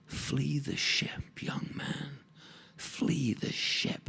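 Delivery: very slow, drawn-out whisper. Telling a sea story, voicing a kobold at his ear: whispering. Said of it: "it whispered".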